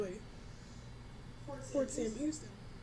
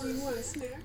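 ordinary talk, nothing marked

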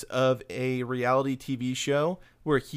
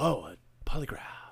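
breathy, barely voiced talk-whisper; 3 dB quieter than usual. Imitating an actor's line from the movie: imitating talk whispering. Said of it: "that's just him talk whispering".

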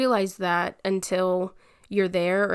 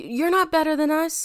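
mock high, stammering, stumbling yell; 8 semitones higher than usual. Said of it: "I was yelling at them".

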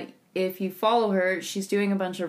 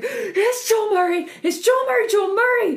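mock freakout, higher and louder; 7 dB louder than usual. Imitating the other speaker spotting someone in the street: imitating someone freaking out. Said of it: "You just see you freak out in the middle of the street".

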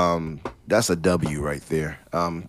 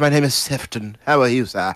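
loud, high, exaggerated put-on British accent; 8 semitones higher, 5 dB louder than usual. Joking about how British a name sounds: mock British accent as Sefton. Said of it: "Sounds like he's gonna eat a crumpet".

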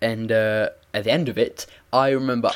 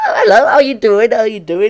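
squeaky, high-pitched, loud voice; 12 semitones higher, 10 dB louder than usual. Retelling answering a call from her: imitating own past squeaky voice. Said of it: "this was squeaky me".

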